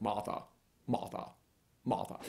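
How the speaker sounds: put-on near-whispered, breathy classic film accent. Talking about a Richard Burton movie and quoting him in a Richard Burton accent. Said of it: "but it's the same accent".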